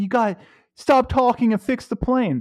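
play-acted, furious, enraged screaming. Retelling how a passenger kept screaming at the pilot: imitating a furious man screaming. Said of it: "My guy starts screaming at the pilot".

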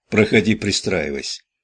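usual speaking voice

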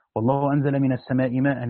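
ordinary delivery

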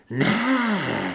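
hissing voice, drawn out. The thing inside Carlos's body answers the narrator's order to let go: hissed. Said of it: "Zasyčela ta věc v Carlosově těle".

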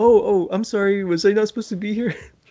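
high, friendly voice. Retelling a scene, imitating Principal Todman: imitating Principal Todman, friendly. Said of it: "so friendly about it".

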